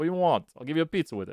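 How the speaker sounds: put-on New York accent. Joking in the middle of explaining simple regression: put-on New York accent. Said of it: "like in New York".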